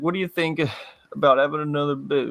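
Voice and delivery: sad, halting, hesitant delivery. Retelling how a man asked his question, imitating Jovi barely getting words out. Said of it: "He could barely even get the words out".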